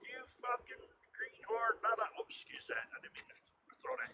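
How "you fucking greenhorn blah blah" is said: acted-out, furious, high-pitched screaming rant. Retelling how a man came up and started screaming: imitating a man screaming. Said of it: "started screaming at me and carrying on".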